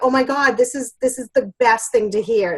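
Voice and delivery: ordinary delivery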